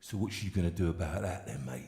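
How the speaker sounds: low, quiet, menacing tough biker voice. Telling a story, he quotes the biker who gulped his drink, mock-menacing biker. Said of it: "Then he says menacingly".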